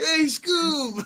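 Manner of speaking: light, high cartoon sidekick voice. Chiming in as the other speaker describes how Shaggy talked, doing a Shaggy voice. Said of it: "Shaggy used to talk like this man".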